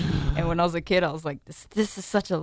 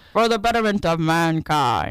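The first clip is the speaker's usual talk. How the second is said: loud, put-on mid-Atlantic accent; 6 dB louder than usual. Co-host rereading a comic book blurb aloud, transatlantic accent. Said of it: "I'm going to try to get the girl's transatlantic accent down".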